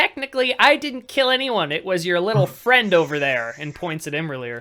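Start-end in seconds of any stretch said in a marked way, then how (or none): 0.0-3.5 in-character high, very loud battle shout. Voicing a villain yelling at a charging player: yelling in character. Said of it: "he yells at you".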